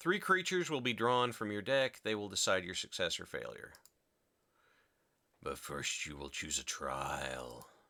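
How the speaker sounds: raspy, rasping creature voice. Reading a game's trial instructions in character, raspy voice. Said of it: "In a raspy voice".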